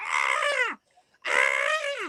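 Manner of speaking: high, mock screaming goat yell. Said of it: "it's just like".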